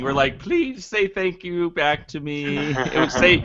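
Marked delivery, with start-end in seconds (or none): 0.4-2.6 put-on, high, pleading, begging tone. Mocking how the hosts just asked guests to thank them: mock begging. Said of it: "that was like just begging".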